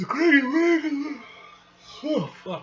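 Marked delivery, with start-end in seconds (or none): 0.0-1.2 high, loud speech stretched by yawning. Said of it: "why am I yawning?".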